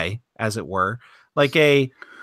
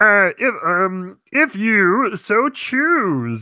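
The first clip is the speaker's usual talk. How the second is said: put-on puppet frog voice, higher; 6 semitones higher than usual. Adding a tag line to a segment intro: Kermit voice. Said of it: "That was my best Kermit".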